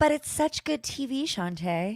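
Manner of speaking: very sarcastic, high, drawn-out tone. Replying to a co-host about a show forcing a moment: very sarcastic. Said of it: "very sarcastic there".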